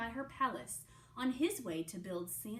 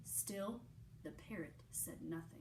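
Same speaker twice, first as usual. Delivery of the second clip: ordinary delivery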